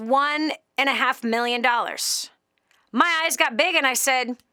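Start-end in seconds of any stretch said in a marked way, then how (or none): none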